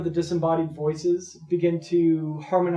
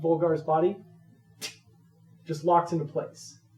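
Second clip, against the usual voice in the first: plain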